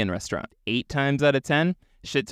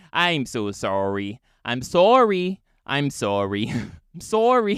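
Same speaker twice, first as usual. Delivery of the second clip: put-on Canadian accent. Acting out apologetic aliens in a retold story: canadian accent. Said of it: "These are Canadian aliens".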